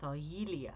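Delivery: Thargelia with the "ye" syllable stressed. Teaching how to pronounce the greek word thargelia, stress on the ye syllable. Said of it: "with the emphasis on the ye part".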